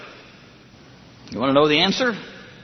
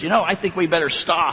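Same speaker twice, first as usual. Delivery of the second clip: ordinary talk, nothing marked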